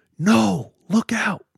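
very high, shrill, loud scream. Telling a story where Blake's dad screams a warning: imitating someone screaming. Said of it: "Blake's dad screams".

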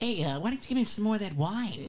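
high-pitched cartoon rabbit voice. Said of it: "You sound like Bugs Bunny".

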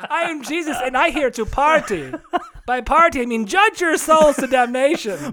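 bad, over-the-top, shrill, very high fake German accent. Doing a comedy bit with a co-host, in a bad fake German accent. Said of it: "I hope all you German listeners forgive us".

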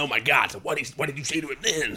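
bad, lousy put-on American accent. Mocking an annoying level of Americanism: worst Keanu Reeves impression. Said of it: "Worst impression of Keanu Reeves that anyone's ever done".

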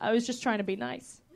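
put-on flat, deadpan tone. Retelling what a man said to her, imitating him deadpan. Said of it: "And he was deadpan".

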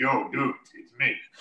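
deep voice sunk way down, casual, playing cool. Parent retells their son answering a group chat, imitating son's voice dropped low. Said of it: "My son's voice dropped like 2 octaves".

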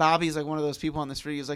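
normal talking voice

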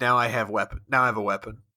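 acted grim, somber delivery. Quoting a favorite line a character says, imitating a grim delivery. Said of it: "where he grimly says".

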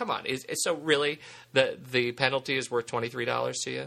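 plain

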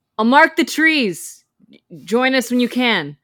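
sudden high yell, voice suddenly found. Playing a character who yells after a rider leaving into the woods: yelling after someone leaving. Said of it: "suddenly finds her voice and yells".

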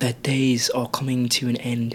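put-on British accent. Saying a quote in British to compare with English: British accent. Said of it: "a quote in British".

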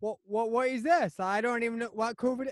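bad fake Cornish accent. Mocking Cornish people while talking with others, in a bad Cornish accent. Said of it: "That's not even a Cornish accent".

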